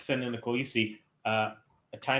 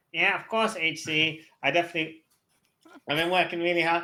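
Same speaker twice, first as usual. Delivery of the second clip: eager, high-pitched nerd character voice; 6 semitones higher, 4 dB louder than usual. Asked if he's been taking care of his board, he answers in a nerd voice. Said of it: "my nerd voice".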